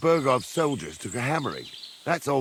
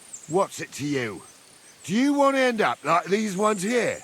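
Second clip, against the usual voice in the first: raised voice climbing higher, pushing back hard; 7 semitones higher than usual. Answering a stranger's question at a battlefield massacre: raised voice. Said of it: "you don't need to raise your voice".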